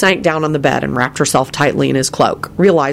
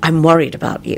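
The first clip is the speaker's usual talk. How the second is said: ordinary delivery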